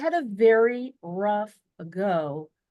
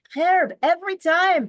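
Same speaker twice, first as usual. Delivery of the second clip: put-on high, loud, amazed European accent. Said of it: "with his, uh, accent from Europe".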